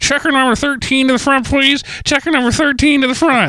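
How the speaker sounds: compressed announcer voice. Explaining how careful recordings come out over a phone codec, as a muffled intercom page. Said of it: "that's what it sounds like".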